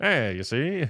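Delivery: put-on 1930s old-time tough-guy gangster voice. Teasing the other speaker about talking out of the side of the mouth, in a 1930s gangster voice. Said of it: "you're like a, a nineteen thirties gangster".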